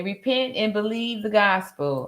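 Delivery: ordinary talk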